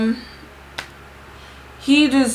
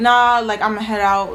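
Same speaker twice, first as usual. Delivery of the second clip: ordinary talk, nothing marked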